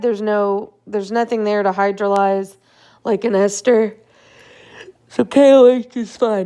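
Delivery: yawning while talking. Explaining a reaction on slides, yawning while talking. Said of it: "I'm sorry I keep yawning".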